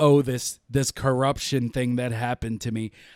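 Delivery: ordinary delivery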